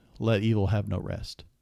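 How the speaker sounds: plain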